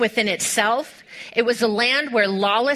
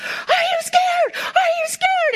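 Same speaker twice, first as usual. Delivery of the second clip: put-on shrill, very high, drawn-out hollering. Retelling a man yelling at young bull riders: retelling a yell. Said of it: "he's yelling at them".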